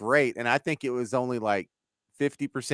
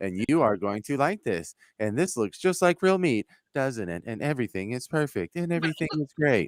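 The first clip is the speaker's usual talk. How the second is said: stilted, odd little robotic female voice. Acting out what they said in an odd, little female robot voice. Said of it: "they did it in the little robot voice".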